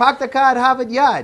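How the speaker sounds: Boston accent, r's dropped. Asked to show off accents, Mom says a line in a Boston accent.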